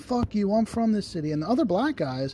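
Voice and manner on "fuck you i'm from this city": mock high, angry screaming outburst. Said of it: "He started screaming".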